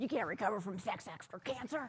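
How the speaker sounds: put-on gruff, grouchy, curmudgeonly old man voice. Retelling what an old man in an airport shuttle said: imitating a curmudgeonly old man. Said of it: "I'm mimicking him perfectly".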